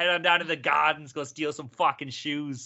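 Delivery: put-on Boston accent. Answering a request to do a boston accent: put-on boston accent. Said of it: "if you can go for a Boston accent".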